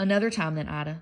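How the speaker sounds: ordinary delivery, nothing marked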